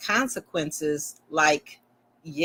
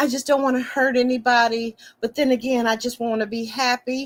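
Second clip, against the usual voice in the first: mock sobbing, higher pitch; 6 semitones higher than usual. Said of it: "all that crying".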